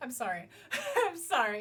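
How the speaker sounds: giggling through the words, voice swooping. Speaker apologizes after a sarcastic bit, giggling. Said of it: "I'm giggling".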